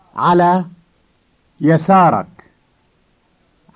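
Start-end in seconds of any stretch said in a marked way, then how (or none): 0.2-2.3 ala yasarak said one word at a time, paused. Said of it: "first a word at a time".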